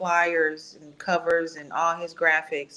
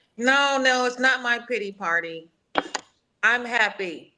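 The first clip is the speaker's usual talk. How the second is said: high, teary voice on verge of crying; 6 semitones higher than usual. Friends offer to be a support system as the speaker protests, close to tears. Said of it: "I'm about to cry".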